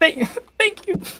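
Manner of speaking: tearful voice. In a role-play scene, she thanks the player's character, crying. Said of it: "just a little bit more crying".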